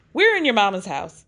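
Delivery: normal talking voice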